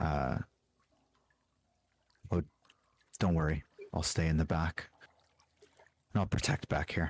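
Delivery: stage whisper with some voice. Narrating a game scene, the speaker voices a character, half-whispering. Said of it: "it just kind of like whispers to Silas".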